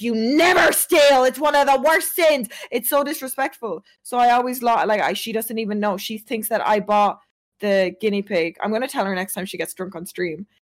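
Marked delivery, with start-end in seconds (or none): 0.0-2.5 mock, high-pitched, scolding yell. Retelling how mom scolded about the stolen euro: imitating mom yelling. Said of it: "she yelled at me".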